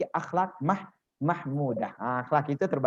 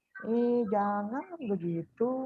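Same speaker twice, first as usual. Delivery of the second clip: very soft, high, lilting, coy and flirtatious coo; 7 semitones higher, 4 dB quieter than usual. Describing a flirty woman talking to men, imitating a coy woman, very soft. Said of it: "Suaranya jadi seratus kali lebih lembut".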